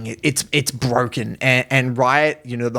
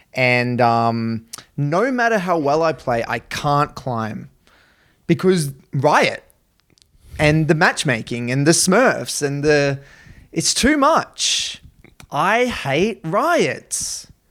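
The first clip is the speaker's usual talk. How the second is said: normal talking voice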